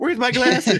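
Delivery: mock panic, high and loud.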